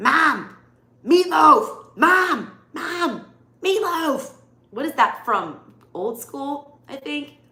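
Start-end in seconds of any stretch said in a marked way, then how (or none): 0.0-4.3 very loud, high, slow, drawn-out yell. Imitating a son who says Mom like Will Ferrell yelling at his mom. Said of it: "he says it like Will Ferrell when he's yelling at his mom".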